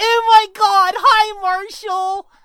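put-on shrill, drawn-out, high, loud girly voice. Describing a voice he hits someone with, the speaker does his Brittany girl voice. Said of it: "I've got this girl voice too, Brittany, and she talks like this".

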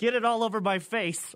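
frantic, wild, half-shouted mild yell. Telling a story about a cook at Chili's, imitating someone screaming. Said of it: "he just starts screaming".

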